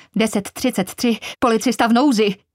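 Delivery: sudden, high-pitched crying out. Reading her officer-in-distress call over Frankie's radio: crying out. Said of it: "Vykřikla".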